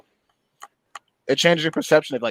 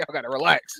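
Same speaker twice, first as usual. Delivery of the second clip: normal talking voice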